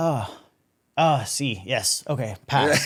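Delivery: very slowly spoken broken English. Retelling how staff looked over his military id: imitating broken english. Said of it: "they're saying this like broken English".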